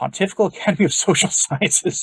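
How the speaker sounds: words broken up by laughter. Reading a passage aloud and reaching an odd name, laughing while talking. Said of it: "I can't say that without laughing".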